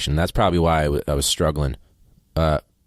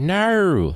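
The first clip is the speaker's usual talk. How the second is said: very high, stretched, drawn-out Australian no; 13 semitones higher than usual. Trying to say the word no in an australian accent. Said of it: "try to say no in an Australian accent".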